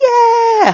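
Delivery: put-on high, slow puppet kid voice. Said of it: "it's like".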